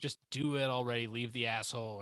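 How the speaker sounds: ordinary delivery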